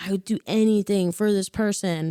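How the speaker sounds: plain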